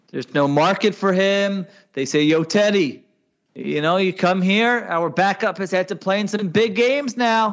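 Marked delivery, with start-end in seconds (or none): 2.2-7.5 persuasive, salesy pitching delivery. Pitching a one-year deal to a backup quarterback: Howie Roseman impression. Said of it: "That was my Howie Roseman impression".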